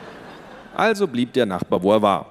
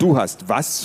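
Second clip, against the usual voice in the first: ordinary delivery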